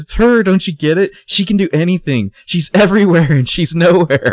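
play-acted very high, loud, distressed freak-out. Recapping a show scene where Mona says this, mock Mona freaking out. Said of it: "Mona is freaking out".

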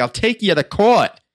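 put-on loud, high-pitched New York accent. Describing a movie scene, quoting Julianne Moore's New York accent. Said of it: "this New York accent comes out of nowhere".

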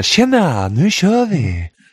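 high, slow radio-host voice.

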